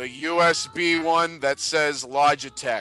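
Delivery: put-on old-timey 1920s storyteller-style voice. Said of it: "talk like that for the rest of the show".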